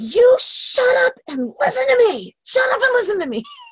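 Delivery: very high, upset, crying yell. Re-enacting yelling into a phone in Home Depot; retelling a yell. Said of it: "I just pull out my phone and yell".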